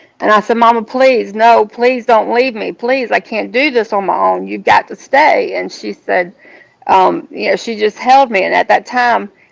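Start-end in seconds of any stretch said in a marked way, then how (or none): 0.6-5.5 mock desperate, begging tone. Retelling begging Mama to stay: reenacting begging. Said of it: "I was begging her to stay".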